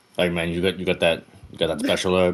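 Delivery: ordinary delivery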